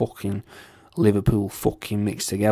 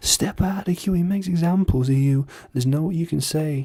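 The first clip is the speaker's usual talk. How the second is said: Sheffield accent, pitched up; 8 semitones higher than usual. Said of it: "That's what it sounds like".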